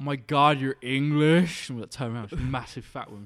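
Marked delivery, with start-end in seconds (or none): 0.0-1.7 very loud, booming, drawn-out bellow. Speaker recounting a customer in an ice cream shop, imitating a woman bellowing. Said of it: "her voice like bellowed".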